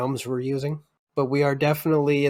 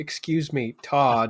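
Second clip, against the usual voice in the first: authoritative woman's voice, much slower. Playing a woman calling out a young man, authoritative woman's voice. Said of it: "like an authoritative woman's voice".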